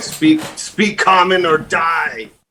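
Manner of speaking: theatrical, high, slow, cried-out delivery. Screaming at the mouth in character, ordering it to speak common: screaming. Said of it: "And then I scream at the mouth".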